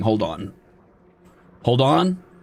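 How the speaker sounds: flustered, panicked, very drawn-out, slow delivery. Thanking chat for gifts mid-fight, panicking. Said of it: "Sorry, I'm panicking".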